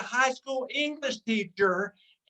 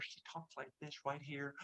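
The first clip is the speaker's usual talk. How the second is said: very quiet, very low, barely audible murmur; 9 semitones lower, 20 dB quieter than usual. Imitating a very smart, sweet woman's quiet volume, barely audible. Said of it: "you can barely hear her".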